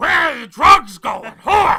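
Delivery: put-on gruff, shouting voice with a New York accent. Discussing a show, a speaker jumps into the bit with an Al Pacino impression. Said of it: "It's like fucking Al Pacino".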